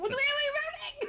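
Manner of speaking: frantic, panicked, very high shout. A player voicing their character calling to the party, panicked yell. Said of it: "I'm panicked".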